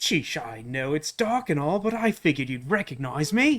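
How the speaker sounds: put-on British accent drifting into Australian. Voicing a nice-sounding villain as a british gentleman: attempted british gentleman voice, sounds australian. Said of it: "That's Australian".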